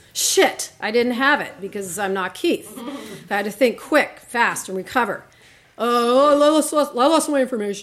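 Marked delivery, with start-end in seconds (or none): 5.8-7.9 laid-back, casual dude bro voice. Retelling a phone call to customer care, bro voice imitating Keith. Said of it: "do my best imitation of Keith".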